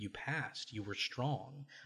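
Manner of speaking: play-acted hushed, very soft, calm, nurturing, soothing tone. Retelling what a woman said to someone who asked if she passed, imitating a calm, nurturing tone. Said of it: "very calmly and like nurturingly".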